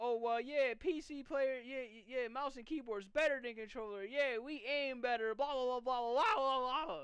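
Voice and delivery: put-on cocky, smug, dismissive know-it-all boasting. Mocking what PC players used to say: imitation of cocky PC players. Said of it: "P C players was becoming extremely cocky and overconfident".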